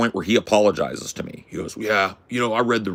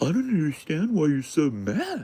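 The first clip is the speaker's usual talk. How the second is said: higher, mock calm with cool, puzzled innocence; 7 semitones higher, 4 dB quieter than usual. Retelling an argument, quoting the other man: imitating calm confused tone. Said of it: "act like I'm cool as a cucumber and confused".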